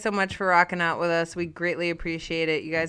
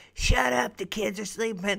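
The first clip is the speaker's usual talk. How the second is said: put-on voice of a seventy-year-old smoker; 4 semitones higher than usual. Quoting a stranger heard on an Xbox headset: 70-year-old smoker voice. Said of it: "Sound like a 70-year-old smoker".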